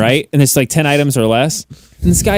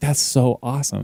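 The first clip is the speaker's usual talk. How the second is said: mock sarcastic muttering, quieter; 8 dB quieter than usual. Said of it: "kinda saying that to myself while he's standing".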